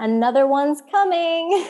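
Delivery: mock loopiest voice, high and loud. Retelling what they said on video before a birth, imitating a loopy voice. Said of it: "in like the most loopiest voice".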